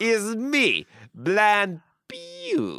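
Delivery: put-on exaggerated French accent. Imitating the character Blind Pew's entrance: over-the-top French accent as Blind Pew. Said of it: "this over-the-top French accent".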